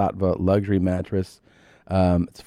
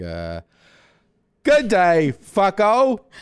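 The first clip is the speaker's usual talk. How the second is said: imitated Australian accent; 12 semitones higher than usual. Asked to show the difference between accents, speaker does australian accent. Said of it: "So Australian is like".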